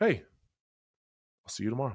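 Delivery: pleasant, nice, friendly tone. Retelling what he said after a punishing practice: imitating him saying it nicely. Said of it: "he would say it so nice".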